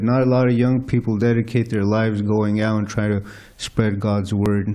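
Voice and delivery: ordinary talk, nothing marked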